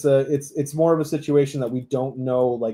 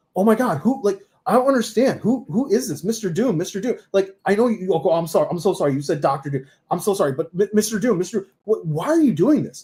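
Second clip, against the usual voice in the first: pitched-up, rambling, babbling superhero voice; 6 semitones higher than usual. Describing the predicted reveal, speaker acts out the hero's lines in a Spider-Man impression. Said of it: "I did the impression".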